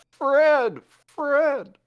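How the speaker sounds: very high, loud, mimicked calling out. Narrating a game scene, a slime calls out, mimicking Fred's voice. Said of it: "it's mimicking his voice".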